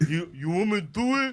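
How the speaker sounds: put-on high, odd kid voice. Retelling a story about a childhood friend, imitating Brady's voice. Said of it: "I was not expecting that voice".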